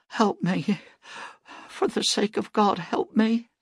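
very high, pleading whisper. A woman he touches begs him for help: whispered plea. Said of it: "the whispered words she spoke".

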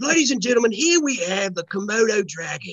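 Australian accent, put on for show. After another speaker brings up australia, trying out an australian accent. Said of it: "Australia is the one that sounds British".

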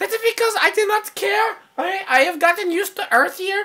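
high-pitched, squeezed, imitated alien voice. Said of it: "I'm gonna do my Conehead impression".

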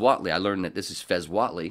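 ordinary delivery

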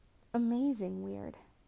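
almost dreamy sigh. Kurt answers Blaine's question as Blaine brings lasagna; almost dreamy sigh. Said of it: "Kurt sighed almost dreamily".

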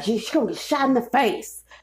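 put-on angry old man voice. Retelling what a disgruntled older man told him: imitating an angry old man. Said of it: "sound like an angry-ass old person".

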